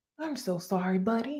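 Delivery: soft, cheesy, corny acted training-video voice.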